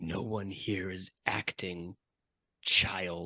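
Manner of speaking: slow, cold, chilling half-whisper. Voicing an actor who grabs a player close: cold half-whisper. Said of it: "says in a cold whisper".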